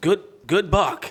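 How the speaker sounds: put-on, very high, panting, breathless stammered blurt. Retelling a call after shooting a buck, imitating stuttering and panting. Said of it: "that's all I could get out".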